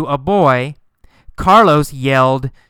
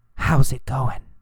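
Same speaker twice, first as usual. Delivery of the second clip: whispered, quieter than surrounding speech; 2 semitones lower, 5 dB quieter than usual. Explaining the difference between a yell and a whisper, demonstrating a whisper. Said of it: "or did he whisper".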